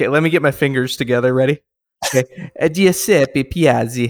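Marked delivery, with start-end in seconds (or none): 2.7-4.1 put-on Italian accent, mock Italian pronunciation. Asked on the show to say the name like an Italian, in an Italian accent. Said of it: "like in an Italian?".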